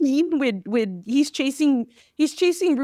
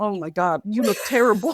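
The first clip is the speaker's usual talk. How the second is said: mock perturbed disgust, lower pitch; 4 semitones lower than usual. Reenacting a movie scene where a towel falls: imitating a perturbed Garcia. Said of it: "he is so perturbed".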